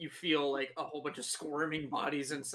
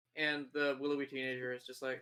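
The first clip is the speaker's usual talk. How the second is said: normal talking voice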